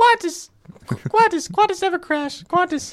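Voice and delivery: squeaky put-on voice. Trying out a voice after a friend says go for it, squeaky Rain Man voice. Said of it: "kind of like Rain Man with a squeaky voice".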